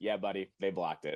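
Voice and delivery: acted, low, quiet monotone with no inflection. Retelling how the dad answers his crying kid, in a flat monotone. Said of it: "the most monotone way".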